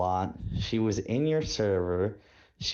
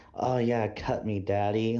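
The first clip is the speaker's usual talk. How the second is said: put-on soft-spoken woman's voice. Imitating a soft-spoken woman into gore: imitating a soft-spoken woman. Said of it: "some chick who was soft-spoken".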